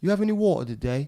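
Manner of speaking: loud London Cockney street accent. Explaining how Londoners speak, the speaker demonstrates a Cockney accent. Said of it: "a Londoner, which they call Cockney".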